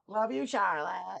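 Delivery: bad Australian accent, slow and drawn-out. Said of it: "my bad Australian accent".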